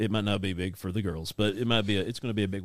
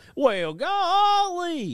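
golly very high, swooping and drawn out; 5 dB louder than usual. Retelling a joking old habit of saying a word in Gomer Pyle's voice. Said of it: "jokingly say it like, uh, Gomer Pyle".

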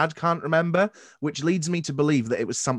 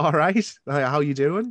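Newcastle Geordie accent. On a podcast, showing how they'd answer a Newcastle friend's call, Geordie accent. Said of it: "I can turn my Geordie on".

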